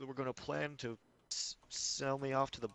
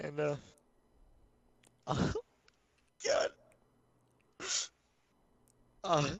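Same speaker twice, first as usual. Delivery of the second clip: weeping, tearful crying voice; 5 dB louder than usual. Telling a painful story to the other speaker, crying. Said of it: "I'm sorry for crying".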